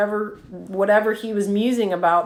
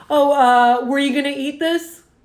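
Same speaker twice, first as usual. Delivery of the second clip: mock, thick, pointed, pitched-up sarcasm; 5 semitones higher, 4 dB louder than usual. Retelling what they said over a half-eaten plate; retelling own sarcastic remark. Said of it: "That's called sarcasm".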